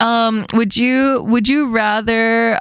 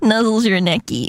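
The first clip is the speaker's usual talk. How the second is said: ordinary delivery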